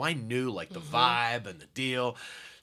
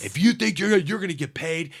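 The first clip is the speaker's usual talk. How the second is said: yelling, higher and louder; 7 semitones higher, 6 dB louder than usual. Retelling the manager at full volume over the comic: imitating the manager yelling. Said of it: "The manager's yelling at me".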